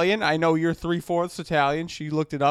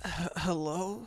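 acted sleepy, stumbling, groggy delivery; 12 dB quieter than usual. Imitating a friend answering the phone: groggy just-woke-up voice. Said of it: "This is my impression".

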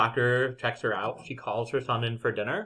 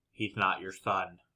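eerie, creepy, low, hushed delivery; 5 semitones lower, 9 dB quieter than usual. Retelling how an old lady turned to Sarah, retelling a creepy line. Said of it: "really creepily is like".

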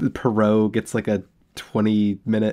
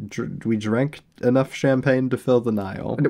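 ordinary talk, nothing marked

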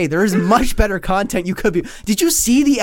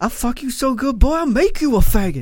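crude, taunting, trash-talking tone; 3 semitones higher than usual. Quoting what was said at a press conference: Mike Tyson impression. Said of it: "He's like".

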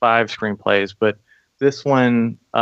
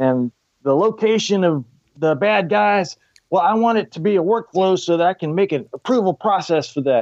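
pitched-up, put-on Southern accent, army general voice; 8 semitones higher than usual. Retelling what a general told the group: imitating a general's southern accent. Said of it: "he had, like, a Southern accent".

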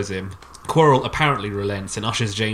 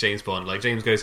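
normal talking voice

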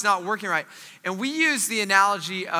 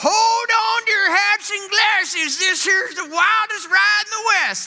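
loud, very high-pitched ride announcer voice; 12 semitones higher, 5 dB louder than usual. Telling a story about dad, who talked like the Big Thunder Mountain guy. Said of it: "talk like the guy from Big Thunder Mountain".

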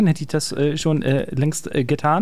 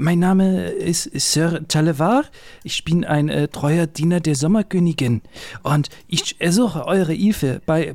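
bad, terrible fake French accent. Introducing himself as Sir Talevar to his friends, bad fake French accent. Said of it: "den wohl schlechtesten nachgemachten französischen Akzent".

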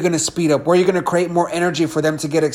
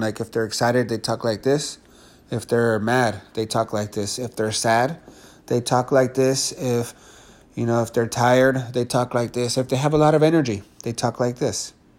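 low, flat, one-tone delivery, no pitch movement; 6 semitones lower, 6 dB quieter than usual. Explaining what monotone speech is, the speaker demonstrates talking in a monotone. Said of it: "That's monotone".

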